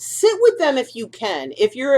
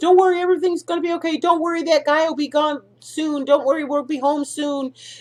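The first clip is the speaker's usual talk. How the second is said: high, gentle, coaxing, soothing voice; 5 semitones higher than usual. Showing how owners try to reassure their dog: mock-soothing voice to a dog. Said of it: "talking in a soothing voice".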